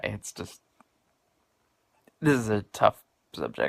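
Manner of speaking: crying while talking, words coming through tears. Speaker describing a tough time and the therapy that helped, crying while talking. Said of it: "sorry, I don't mean to cry".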